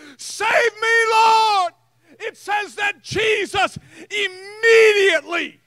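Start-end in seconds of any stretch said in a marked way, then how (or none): 0.2-1.7 put-on crying out at full voice. Retelling Peter's cry while sinking in the water: retelling a shout. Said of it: "and he shouts it".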